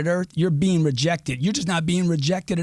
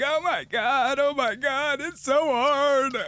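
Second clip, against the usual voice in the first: mock crying, much higher, much slower; 9 semitones higher than usual. Retelling his wife's words after an audition, imitating someone crying. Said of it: "and she was crying".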